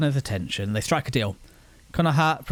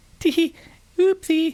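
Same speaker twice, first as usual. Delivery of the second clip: put-on cutesy anime girl voice, very high; 14 semitones higher, 4 dB louder than usual. Reacting to a cute game intro with a mock anime girl voice. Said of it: "I haven't got the voice change to go".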